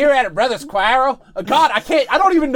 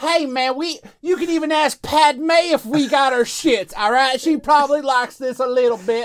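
put-on Southern US accent; 3 semitones higher than usual. Telling a co-host where listeners can find the show, going all southern. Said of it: "You're going so, all southern now".

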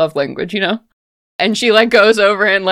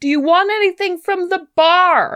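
much higher-pitched bubbly voice. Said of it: "And she's like".

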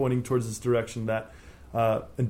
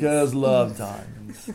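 clumsy, bad put-on English accent; 4 dB louder than usual. Joking with the others, the speaker tries a line in a bad English accent. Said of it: "That was my attempt at the accent. English accent".

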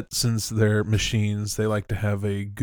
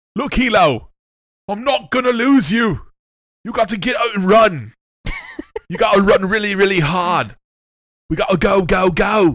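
put-on very high, very loud, yelled Cockney accent; 11 semitones higher, 8 dB louder than usual. Recapping a scene, one speaker redoes a character's line to a companion: Cockney accent as Sharon. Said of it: "This is the Cockney British version".

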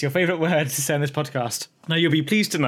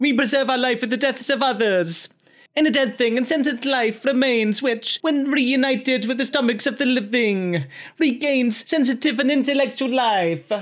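put-on Italian accent, pitched up higher; 9 semitones higher than usual. Reading a quote aloud, a speaker channels Leonardo da Vinci with an Italian accent. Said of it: "I need my Italian accent here".

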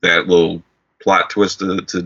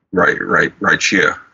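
normal talking voice

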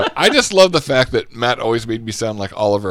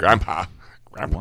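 breathy, whispered put-on voice; 11 semitones lower, 8 dB quieter than usual. Calling out as in the impression: Herman Munster voice. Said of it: "I hear Herman Munster as well".

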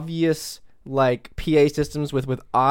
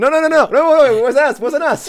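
very high, very loud, shrill put-on Italian accent; 12 semitones higher, 8 dB louder than usual. Acting out a leader denying blame: imitating President Xi, sounding Italian. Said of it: "President Eleven's like".

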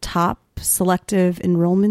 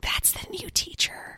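very quiet, hushed whispered aside; 13 semitones higher, 12 dB quieter than usual. Retelling what students say as the new teacher walks by: imitating a whisper. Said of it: "whisper when you walk by".

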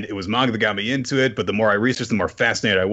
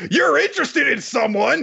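very high, rough line blurted aloud. The speaker retells Ruru answering a shy girl, Ruru blurting out loud. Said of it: "Ruru just out loud goes".

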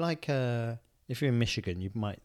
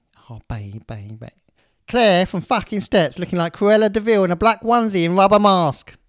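put-on Essex accent, higher and louder; 8 semitones higher, 15 dB louder than usual. Reading a passage from a book aloud, all in capitals: Rylan voice. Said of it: "you can do the voice if you want".

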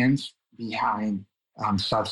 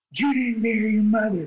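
mock drunk screaming, very high; 12 semitones higher, 3 dB louder than usual. Retelling how the drunk person they married screamed at them: imitating someone screaming. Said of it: "She was screaming at me".

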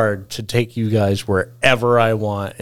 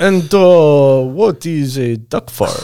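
imitated European accent; 4 semitones higher, 5 dB louder than usual. Telling a bar story, the speaker voices a European florist: imitating a European accent. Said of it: "a European florist who's like".

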